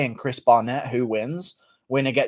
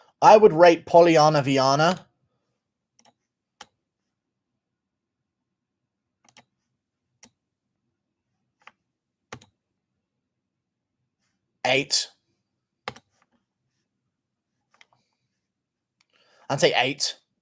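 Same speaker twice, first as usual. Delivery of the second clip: eight said hard, aggressive and forceful; 3 semitones higher, 3 dB louder than usual. Speaker giving a person a rating, saying it aggressively. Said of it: "I don't know why I'm saying eight so aggressively".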